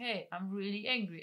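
plain

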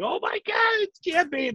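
very high, excited, freaking-out squeal. Retelling own reaction while sick with no voice, re-enacting own excited screaming.

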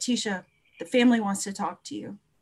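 mock grave, serious tone. Retelling what the supervisor said when he came out: retelling a serious tone. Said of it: "he said real serious".

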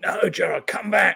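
put-on high, raspy, raw, rough shout. Retelling being shouted at while flatlined: imitating someone shouting. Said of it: "one of them started shouting at me".

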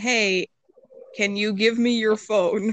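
ordinary talk, nothing marked

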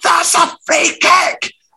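scream called out very high. Retelling screaming during the game that it was a free kick: retelling own past scream. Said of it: "I was screaming at times".

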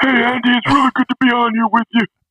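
very high, raspy voice. Speaker imagines Doc Rivers as a guest on the show, in a raspy Doc Rivers voice. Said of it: "his raspy voice, he'd be like".

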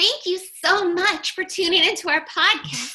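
very high doll-like voice. Closing a podcast episode: Barbie voice. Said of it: "I'm going to close this time with my Barbie voice".

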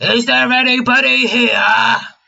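loud, rough, high-pitched hollering. A player speaking as Krill calls out to fill the empty space, loud holler. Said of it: "Krill lets out a loud holler".

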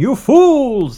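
put-on shrill, booming, loud, high English accent. Picturing someone from england saying the phrase: english accent. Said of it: "someone, like, from England going".

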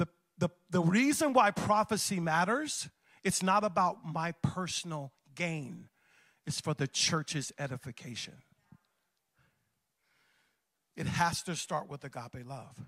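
slow, deliberate preaching. Repeating a point to the church audience so it lands, speaking slower. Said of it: "I'm gonna slow down and say it slower".

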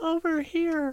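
put-on tiny, very high little-girl voice. Asked to give their best little girl voice, calling out: little girl voice. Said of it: "give us your best little girl voice".

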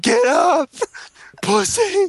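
mock very high, shrieked yell. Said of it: "starts yelling".

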